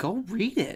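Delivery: soft, with a little disgust. Imitating another speaker telling listeners to read it: imitating someone saying it with disgust. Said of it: "You said that with a little disgust".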